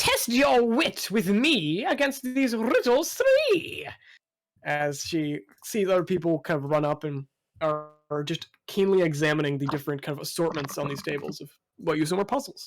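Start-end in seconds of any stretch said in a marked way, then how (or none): 0.0-3.9 drawn-out, swooping, high, sing-song goblin shout. Game master voicing a goblin at a riddle stall, goblin shouting. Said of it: "and the goblin shouts".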